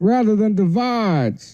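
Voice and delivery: put-on faint Southern accent, leaning Southern on "divides". Doing a Joe Biden impression for the others. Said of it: "But that's a little Southern".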